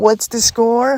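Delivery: very high-pitched, most annoying, needling teasing voice. Retelling how an opponent would make them admit they were losing, imitating a most annoying tone. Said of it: "ask me in the most annoying tone of voice".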